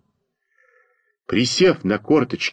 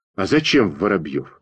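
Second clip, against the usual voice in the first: ordinary delivery, nothing marked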